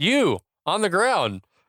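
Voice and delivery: slow, drawn-out police bullhorn voice. Retelling a movie scene, quoting a helicopter loudspeaker: imitating a police loudspeaker voice. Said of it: "Just like this".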